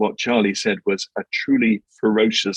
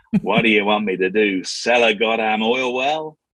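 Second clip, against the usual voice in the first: put-on Texan-accented voice. Telling a story, quoting a man's reply in a texas accent. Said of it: "you'll forgive my Texas accent here".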